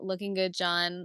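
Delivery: normal talking voice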